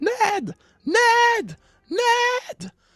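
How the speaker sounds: frantic, panicked woman's screams, very high-pitched. Describing what can be heard, imitating the woman screaming her husband's name. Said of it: "qui fait juste crier le nom de son mari".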